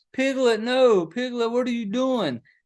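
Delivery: high, frantic, helpless, useless yelling. Speaker recounts a movie scene where a husband only yells, imitating Christopher Robin yelling. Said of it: "You're sitting there just yelling like".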